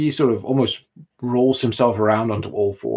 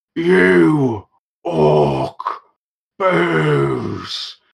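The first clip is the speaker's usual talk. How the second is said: put-on loud, swooping, angry drunk yelling, "you" stretched out; 5 semitones higher, 5 dB louder than usual. Narrating a scene, voicing a swaying drunk at the barkeep with angry drunken yelling. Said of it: "angrily yelling at the barkeep for more".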